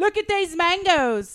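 put-on shrieked, very high English accent, a bit Australian. Narrating yelling while passing a park with a friend, in a loud English accent, bit Australian. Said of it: "Bit Australian".

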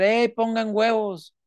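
mock drunk yelling. Retelling a drunk fan yelling at the team: Juan Borrascas drunkenly shouting. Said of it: "Y les empieza a gritar".

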